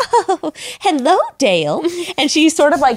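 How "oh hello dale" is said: put-on dainty, sweet fairy-tale princess voice. Mimic how she greeted Dale whenever she was around him, imitating a put-on Disney princess voice. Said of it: "she put on this Disney princess thing".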